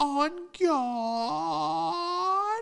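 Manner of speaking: put-on very high, loud, drawn-out old man voice. Retelling what an old man backing out said: imitating an old man. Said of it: "an old dude backing out".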